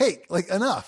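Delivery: exasperated, irritated, fed-up pushback. Retelling how a teased stranger pushed back: imitating an irritated guy. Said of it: "he was getting irritated".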